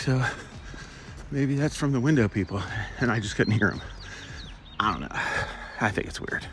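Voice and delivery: soft, out-of-breath words between heavy breaths. Speaker apologizes while hustling during a recording, breathing heavy. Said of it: "I'm breathing heavy because I'm hustling".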